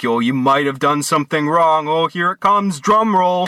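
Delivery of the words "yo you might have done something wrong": solemn, grave, low-pitched cop voice. Speaker retelling being pulled over, imitating the cop: grave, low cop voice. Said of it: "speaks in this, like, grave, low fucking voice".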